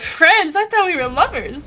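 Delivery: line dripping with heavy sarcasm. A character replies after being forced to be friends, sarcastic. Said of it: "like sarcastically".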